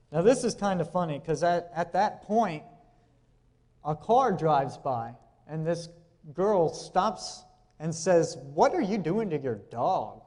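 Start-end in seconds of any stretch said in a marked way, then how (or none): 8.5-10.0 put-on bratty, snotty little voice. Retelling a girl who stopped her car, the speaker is imitating a snotty little voice. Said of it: "Like in a little snotty voice like that too".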